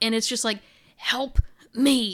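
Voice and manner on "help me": choked, strangled voice being cut off. Describing a recording heard in a theater, the speaker is imitating a choked voice. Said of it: "a voice that sounds like it's being choked off".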